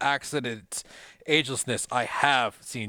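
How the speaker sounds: plain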